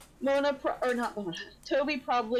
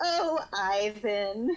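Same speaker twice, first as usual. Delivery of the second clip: giggly, laughing through the words. Voicing a character reacting to Ivan's cup of tea: giggling. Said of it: "she giggles".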